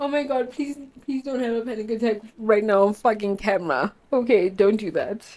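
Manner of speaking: crying, tearful voice. On camera, having an episode, the speaker talks to herself while crying. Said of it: "I'm crying because I'm having an episode".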